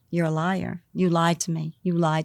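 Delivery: angry, bad-tempered, accusing outburst. Retelling someone storming out of the bedroom: retelling a violent, bad-tempered accusation. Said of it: "I don't wanna do it in his voice".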